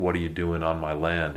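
ordinary talk

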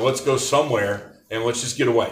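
ordinary talk, nothing marked

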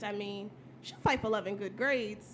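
plain

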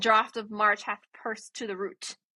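ordinary talk, nothing marked

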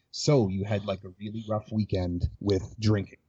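drawn-out, slow, soothing late-night FM DJ voice. Showing how to mirror someone's words back to them: late night FM DJ voice. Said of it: "here's me slowing it down to point two five times speed".

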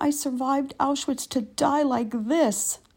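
put-on high, sobbing old woman voice weeping through words. Retelling an old lady's words under a pile of women: imitating an old lady sobbing. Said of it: "was on top of me sobbing".

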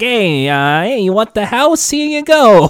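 put-on loud, drawn-out New York accent. Picturing how a character came across: new york landlord voice. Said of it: "like a New York landlord".

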